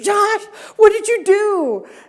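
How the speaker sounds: very high, loud, angry scream. A mother retelling finding soap suds everywhere and calling out to Josh, retelling a scream. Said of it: "and I screamed".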